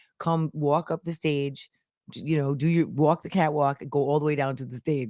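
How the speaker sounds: usual speaking voice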